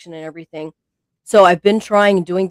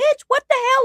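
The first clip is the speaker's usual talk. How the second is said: mock indignant, angry, outraged cry, pitched very high. Retelling an argument with a chatbot: retelling own yelling. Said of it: "I was yelling at her".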